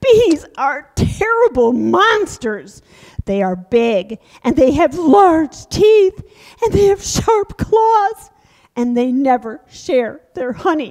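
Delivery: loud, high, put-on bear puppet voice. A bear puppet just out of winter speaks in a story, hungry bear puppet voice. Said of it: "Oh, winter is over, and I'm hungry".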